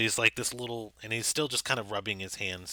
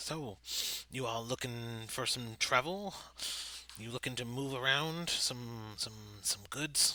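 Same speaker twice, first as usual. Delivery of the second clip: chattering, chittering little half-goblin voice; 8 dB quieter than usual. Voicing a half-goblin who approaches the players: chittering goblin voice. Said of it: "smiling at you and kind of chittering".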